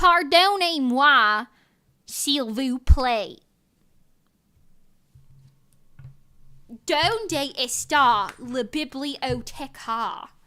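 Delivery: Southern American accent. Speaking French and Spanish for fun, in a Southern American accent. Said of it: "In like a Southern American accent".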